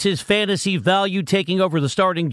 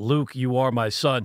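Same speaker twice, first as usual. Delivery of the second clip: dark, deep, low sci-fi movie-villain voice; 5 semitones lower, 4 dB quieter than usual. Riffing on how a name sounds, in James Earl Jones deep voice. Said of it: "In a deep voice".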